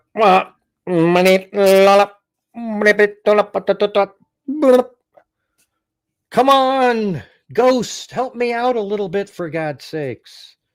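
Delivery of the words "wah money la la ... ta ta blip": jumbled, garbled, ghostly nonsense-syllable babble. Complaining to the spirits about how they answer: imitating garbled spirit babble. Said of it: "Instead, you go".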